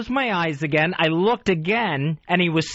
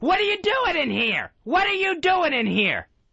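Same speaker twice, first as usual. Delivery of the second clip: mock, very high-pitched, screamed, demanding tone; 11 semitones higher than usual. Speaker re-enacts waking to find a person in the house, retelling a scream. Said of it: "I was screaming".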